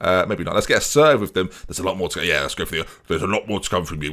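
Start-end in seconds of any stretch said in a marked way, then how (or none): 3.1-4.1 deeper voice, lower and quieter. Reading out a team talk to the players: deeper voice. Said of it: "Why am I got a deeper voice?".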